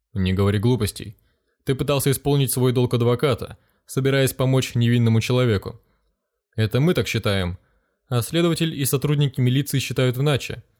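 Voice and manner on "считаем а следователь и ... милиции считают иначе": ordinary delivery, nothing marked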